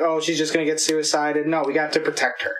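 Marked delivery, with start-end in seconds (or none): none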